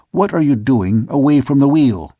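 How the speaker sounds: stern, severe, strict and reproving tone. Narrator reads the old man asking a sailor why he left the wheel, stern voice. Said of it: "asked the old man in a stern voice".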